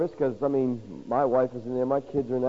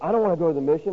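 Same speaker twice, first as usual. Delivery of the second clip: bristling, defensive, pushing-back tone; 4 semitones higher than usual. Retelling how a man turned down the shelter, imitating him getting real defensive. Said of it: "he got real defensive".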